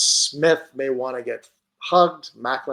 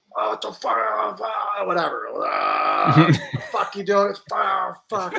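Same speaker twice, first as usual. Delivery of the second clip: angry, high-pitched outburst, words spat out; 7 semitones higher than usual. Retelling a favorite story where Torts comes down, doing a Torts impression. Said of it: "That's a good Torts impression".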